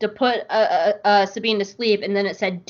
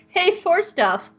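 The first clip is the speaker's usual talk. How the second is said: high, slow shrugging voice. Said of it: "just being like".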